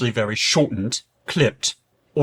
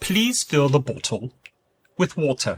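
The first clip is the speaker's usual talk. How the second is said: received pronunciation British English accent. Explaining accents, demonstrating an example sentence in an RP British accent.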